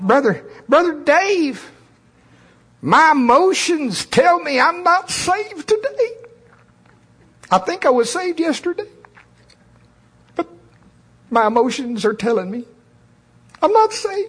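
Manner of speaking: squeaky, very high, nasal creature voice. Giving an example, the speaker mocks a believer in the nasalated flesh creature voice. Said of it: "I would use the voice of the nasalated flesh creature".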